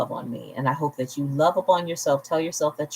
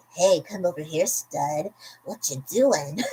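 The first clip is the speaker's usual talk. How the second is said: put-on seductive, sexy voice; 2 semitones higher than usual. Showing off a fun voice for reading scripts, in a mock sexy voice. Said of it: "Would you find this voice really sexy".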